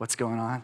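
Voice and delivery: furtive, hushed half-whisper, very quiet. Acting out slaves making bricks, asking about news: half-whispering. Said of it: "And you're whispering".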